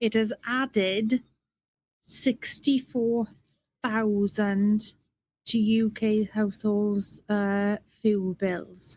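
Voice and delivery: slow, halting, deliberate, breaks inside phrases. Speaker telling listeners they will say this slowly for everyone, said slowly. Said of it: "I will say this slowly for everyone to get".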